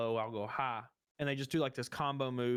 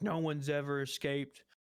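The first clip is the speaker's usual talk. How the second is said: put-on angry voice. Retelling a cartoon fight scene: imitating angry Morgan. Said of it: "he's all mad and stuff".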